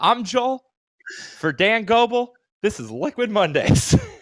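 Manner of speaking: high, acted voice on the verge of tears. Retelling the old show sign-off: retelling own sign-off, near tears. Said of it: "You always sound like you're about to cry when you do that".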